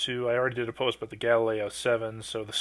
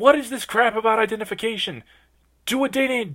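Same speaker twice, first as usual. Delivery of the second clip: put-on scream, higher and louder; 11 semitones higher, 5 dB louder than usual. Retelling shaking the screen while watching an episode: imitating own past screaming. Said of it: "I'm almost screaming".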